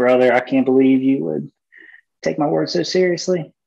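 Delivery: put-on thick, laid-on Southern Louisiana accent. Retelling what a Southern Louisiana guy said, in his thick Southern Louisiana accent. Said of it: "just imagine that that like thick accent".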